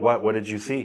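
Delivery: ordinary talk, nothing marked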